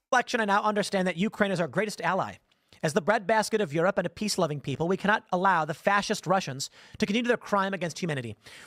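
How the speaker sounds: fast, mock-earnest, sarcastic reading. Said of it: "he's doing sarcasm".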